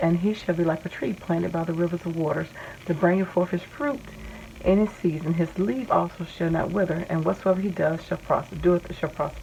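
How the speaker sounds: ordinary talk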